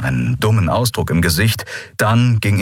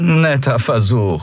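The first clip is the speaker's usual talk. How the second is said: faintly pitying tone; 3 semitones higher than usual. A man answers a woman's suggestion, with a trace of pity. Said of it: "sagte er mit einer Spur Mitleid".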